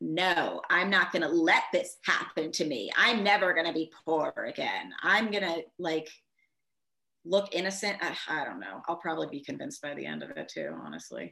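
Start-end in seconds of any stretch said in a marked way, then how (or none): 0.0-8.0 defiant, unbothered reality-star voice. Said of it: "that was a dynamite [name] impression".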